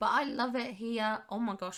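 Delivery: voice cracking and breaking mid-phrase. Giving feedback on another person's creation, voice cracking. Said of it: "my voice is cracking".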